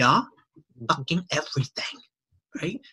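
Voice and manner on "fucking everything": blunt, no-nonsense delivery. Retelling a question about content marketing, the speaker imitates Gary's answer. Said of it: "how he speaks like that".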